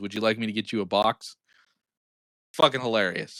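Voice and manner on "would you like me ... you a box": mock bone-dry deadpan, low voice. Retelling a movie scene where an archer answers a dwarf, retelling a deadpan line. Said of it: "the fucking archer deadpan turns over to him and says".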